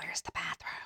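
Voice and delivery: hushed, barely voiced whisper. Retelling someone asking where the bathroom is: imitating a whisper. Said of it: "So she whispers".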